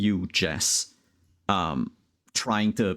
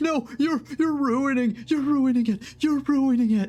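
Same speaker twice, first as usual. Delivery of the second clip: sobbing, very high-pitched, crying begging. Speaker voicing Mister Morris as he is dragged out, crying while pleading. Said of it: "He's like crying and going like".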